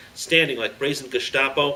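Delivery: ordinary delivery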